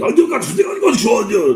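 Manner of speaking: loud, aggressive put-on Japanese accent, high and swooping. Joking that Japanese sounds aggressive for simple things: imitating aggressive Japanese-sounding speech. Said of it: "their language is so aggressive".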